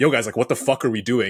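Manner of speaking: aggressive put-on tone. Retelling what a player said after a point: imitating Mike McKenzie's aggressive tone. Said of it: "in an aggressive tone".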